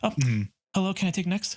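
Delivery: polite customer service voice. Imitating own past words at work: customer service voice. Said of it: "when I did, like, the voice".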